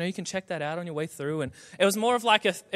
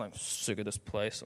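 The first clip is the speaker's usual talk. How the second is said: whispered grumble, mumbled under the breath; 10 semitones lower, 12 dB quieter than usual. Recalling being a teenager, mumbling to oneself. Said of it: "I'd go like mumble to myself".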